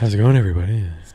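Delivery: fake sultry presenter voice. Asked to do the Scott Concast bit, greeting everybody: sexy Scott Concast voice. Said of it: "My Scott Concast".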